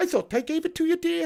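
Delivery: high Scottish woman voice. Speaker shows what the famous film voice amounted to, Mrs. Doubtfire voice. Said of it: "High pitched Scottish woman saying dear".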